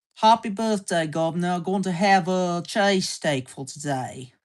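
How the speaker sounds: put-on, attempted British accent. Asked to show an accent, trying a British accent on sample lines. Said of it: "That is a British accent".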